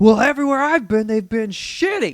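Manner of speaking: loud, high, heated, worked-up complaining. Retelling what a man said to them in a conversation, mock-heated complaint. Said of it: "He was so heated".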